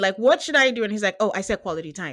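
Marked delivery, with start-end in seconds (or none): 1.2-2.1 low, condescending, patronizing tone, acted. Retelling a couple's argument, imitating the man's condescending tone. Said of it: "Again, a condescending tone".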